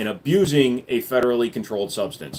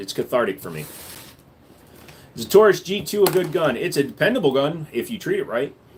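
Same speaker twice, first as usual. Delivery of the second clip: plain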